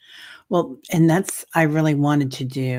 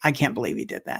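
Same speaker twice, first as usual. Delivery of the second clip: acted-out mutter, quieter; 2 semitones lower, 4 dB quieter than usual. Retelling what was said about a husband: imitating muttering under breath. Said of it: "I would just say under my breath".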